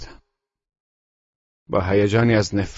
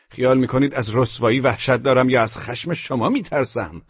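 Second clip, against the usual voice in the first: ordinary delivery, nothing marked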